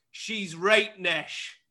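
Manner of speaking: quite angry, cross delivery. Quizzing the listener on a Sheffield dialect word, said angrily. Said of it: "you said it quite angrily".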